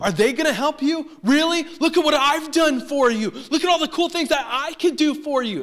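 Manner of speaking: high, loud, angry shouted outburst.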